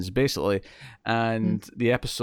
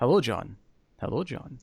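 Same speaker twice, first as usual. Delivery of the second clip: warmly welcoming tone. Quoting a film line in a Hammond voice. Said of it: "I'm more of a Hammond".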